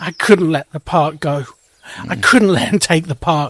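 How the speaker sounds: speaking through tears, tearful, crying. Reacting right after another player concedes the deal: crying while talking. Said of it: "Combo, you're crying".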